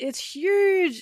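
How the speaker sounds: high, loud yell of disbelief. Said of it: "makes a face of disbelief and yells".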